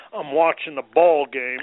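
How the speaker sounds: loud, gruff, grumpy put-on voice.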